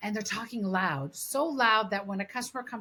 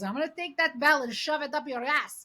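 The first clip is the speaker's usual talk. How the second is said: put-on Greek accent, pitched up; 5 semitones higher than usual. Retelling the speaker's dad confronting a man ringing a bell, Greek accent. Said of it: "he's like in his Greek accent".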